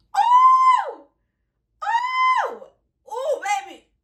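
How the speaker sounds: very high, very slow, swooping, drawn-out birdlike oohs. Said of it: "this is how they be sounding".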